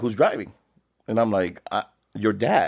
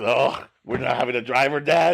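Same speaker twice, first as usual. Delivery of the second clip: put-on teenage son's voice, talking back; 3 semitones higher than usual. Retelling what the son said about not having a driver: imitating his son. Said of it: "He's so ridiculous".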